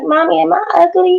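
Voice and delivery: put-on tearful little girl voice, high and slow. Retelling a daughter coming home from school, imitating a child crying. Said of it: "she came home crying".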